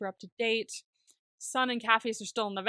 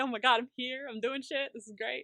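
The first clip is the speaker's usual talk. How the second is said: put-on excited chatter, quieter; 2 semitones higher than usual. The narrator acts out Bug joining the planning scene, mock-excited Bug. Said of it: "He's just very excited".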